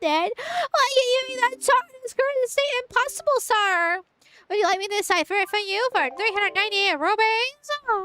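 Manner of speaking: put-on pinched-nose nasal character voice. Performing a character's lines, holding the nose for a nasal voice. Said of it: "I'm actually holding my nose to do part of the voice".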